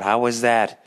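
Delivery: put-on mild half-yell, toned down. Retelling a reply yelled at the neighbor: retelling own yell. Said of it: "I yelled out".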